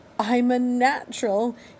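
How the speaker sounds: high, squeaking storybook bird voice. Narrator reads a bird's line as it learns to fly, squeaking. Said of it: "he squeaked".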